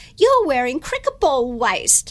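put-on broad Australian accent. Retelling what a gentleman who walked up said to the speaker, broad Australian accent. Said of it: "in a very broad Australian accent said to me".

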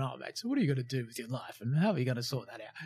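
preachy tone. Retelling own past words to a mate over a beer: imitating own holier-than-thou tone. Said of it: "coming off holier than thou".

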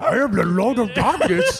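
non-human, dog-like put-on voice. Acting out the non-human voice that answered the nuns, dog-like non-human voice. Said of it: "like a dog's voice?".

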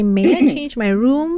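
normal talking voice

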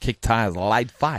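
put-on twangy delivery. Repeating something a man said on Monday, with a twang. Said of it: "You have a twang".

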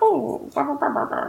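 imitated, mock, put-on old-man voice. A player mimics the voice another player used for a character, imitating an old-man voice. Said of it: "just like an old man".

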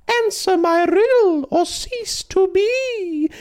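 silly, squeaky, very high, slow voice. A stone sphinx speaks to a man, in a stupid high-pitched voice. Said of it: "in the same stupid high-pitched voice".

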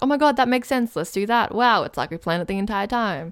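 ordinary delivery

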